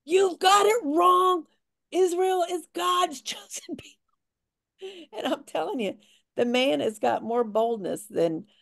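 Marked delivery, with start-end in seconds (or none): 0.1-5.1 very high, bold, drawn-out all-out yelling. Describing a man alone at a protest, retelling a man yelling. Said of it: "He's alone by himself yelling at the protesters".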